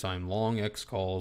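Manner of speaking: flat, low, slow, low-energy monotone drone. Mocking people with no excitement in their voice: imitating a flat monotone. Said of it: "they're talking monotone like this".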